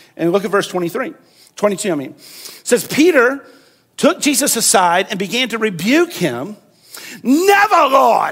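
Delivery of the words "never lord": grand, hammy, loud theatrical stage voice, declaimed. Speaker retelling a Bible passage, voicing Peter's line in a theatrical accent. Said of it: "he said in his best theatrical accent".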